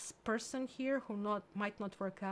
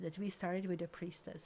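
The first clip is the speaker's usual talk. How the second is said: normal talking voice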